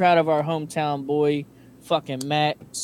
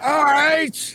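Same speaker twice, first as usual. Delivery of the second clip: mock very high, wild maniac screaming; 11 semitones higher, 4 dB louder than usual. Showing how the fighter screams his saying: imitating Stipe screaming. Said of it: "he just sounds like a fucking maniac screaming it".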